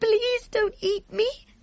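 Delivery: very high-pitched, stammering, pleading voice. Sophie pleads with the giant who says he is hungry; stammering. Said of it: "Sophie stammered".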